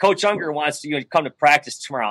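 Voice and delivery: normal talking voice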